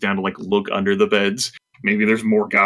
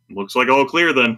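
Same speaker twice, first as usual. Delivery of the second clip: ordinary delivery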